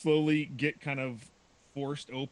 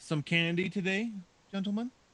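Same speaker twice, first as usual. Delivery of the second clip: much more feminine, higher, very clear delivery; 5 semitones higher than usual. Narrating a giant cube speaking to the party, much more feminine, clearer voice. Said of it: "a much more feminine voice says much more clearly".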